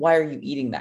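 put-on, accusing, challenging tone. Acting out how people question bodybuilding meals: imitating an accusatory question. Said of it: "very accusatory".

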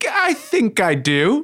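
voice jumping up an octave. Asked about auditioning for a Broadway musical, answering with voice jumping up an octave. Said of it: "Your voice just went up an octave".

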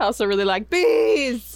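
laughing while talking.

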